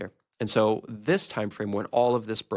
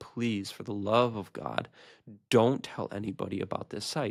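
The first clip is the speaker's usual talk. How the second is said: put-on crying, tearful pleading voice. Retelling a phone call with an apology: imitating someone crying while pleading. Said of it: "he's literally crying".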